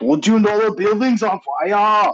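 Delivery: bad accent drifting into Chinese. Trying an impression you can't do and apologize for, in a failed accent, sounding like a Chinese man. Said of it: "I'm sounding sounding more like a Chinese man now".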